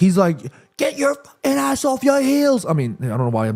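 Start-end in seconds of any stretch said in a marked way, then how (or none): 0.8-2.7 put-on high screamed British accent. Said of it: "screaming in a British accent".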